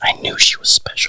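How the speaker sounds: whispered, under-the-breath mutter. Remarking in character while others ask questions: muttered under breath. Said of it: "Under my breath".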